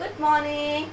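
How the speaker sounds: plain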